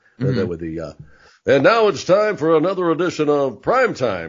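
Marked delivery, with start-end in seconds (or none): 1.5-4.3 showy, pitched-up TV announcer voice. Mocking the announcer voice guy he always hated, in announcer voice. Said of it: "the announcer voice guy".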